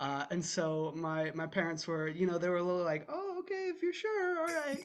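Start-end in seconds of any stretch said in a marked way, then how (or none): 3.1-4.8 squeaky, very high-pitched voice. Retelling how the parents answered a wish to act: imitating parents. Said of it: "that's what my parents sound like, exactly like that".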